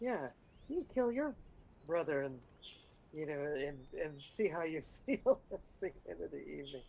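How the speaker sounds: slightly hushed voice. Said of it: "and in a slightly hushed voice".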